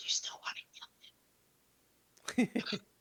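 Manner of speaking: whisper, very quiet, barely audible. Leaning in to a companion during a conversation: whispering really quietly. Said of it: "I whisper, like, really quietly".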